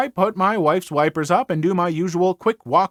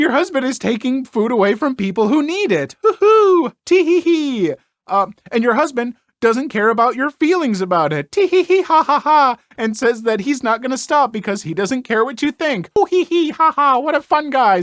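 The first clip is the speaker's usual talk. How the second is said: forced lighthearted, sarcastically cheerful; 6 semitones higher, 4 dB louder than usual. Responding to someone about their husband, trying to keep it light: forced lighthearted, hiding anger. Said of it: "See, I'm being lighthearted. I'm not angry".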